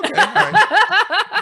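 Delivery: high, loud, slow, mock unbothered "okay".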